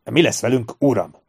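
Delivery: ordinary delivery, nothing marked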